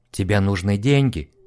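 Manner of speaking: in a whisper. Narrator reads Julia's question to Eddie, whispered. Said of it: "прошептала Джулия".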